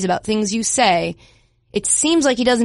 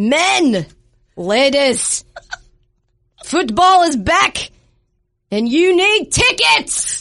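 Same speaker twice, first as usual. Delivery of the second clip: slow, stirring, rousing delivery; 5 semitones higher than usual. Asked to do an ad read like a film freedom speech: William Wallace voice. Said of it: "do this ad read like you're William Wallace".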